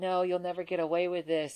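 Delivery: mock very high screaming cry. Retelling running forward in the game's final chamber: imitating a scream. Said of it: "I run forward screaming".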